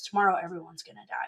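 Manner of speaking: put-on very quiet, soft child voice. Retelling what a kid said at camp: imitating Kathy speaking very quietly. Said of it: "Kathy very quietly just kinda goes".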